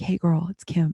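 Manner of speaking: put-on whisper.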